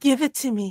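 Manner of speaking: coaxing, seductive and alluring tone. Playing a character who grabs another's arm, retrying the line as asked: seductive. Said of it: "Why don't you try that seductively".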